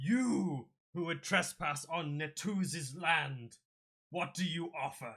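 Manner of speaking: booming, very loud, high bellowing monster call. As the manticore met at Umbridge Hill, call out to the party, bellowing. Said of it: "this bellowing voice calls out".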